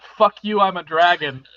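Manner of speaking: plain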